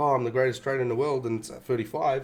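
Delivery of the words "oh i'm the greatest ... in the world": ordinary delivery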